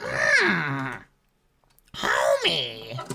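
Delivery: cartoon character voice, pitch swinging up and down. Showing how a cartoon character sounds: Marge Simpson voice. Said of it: "Marge is like".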